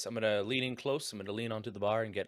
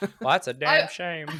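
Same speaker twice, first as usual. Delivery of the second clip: high, loud frog puppet character voice; 6 semitones higher, 7 dB louder than usual. Speaking in character while another speaker marvels at the voice, in a Kermit the Frog voice. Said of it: "Kermit sounding guy says".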